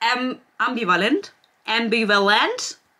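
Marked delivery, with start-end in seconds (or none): 1.7-2.7 put-on British English accent. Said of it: "with an English accent".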